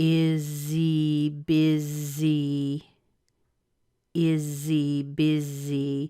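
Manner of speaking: very slow, drawn-out, piece-by-piece delivery. Showing a learner how the words link: very slow breakdown. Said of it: "If I break this down very slowly".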